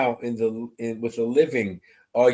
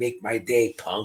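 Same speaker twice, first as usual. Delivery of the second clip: put-on, really raspy movie tough-guy voice. Showing Mel how a man sounded, in a really raspy Clint Eastwood voice. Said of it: "a really raspy voice, like Clint Eastwood".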